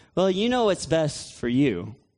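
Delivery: ordinary talk, nothing marked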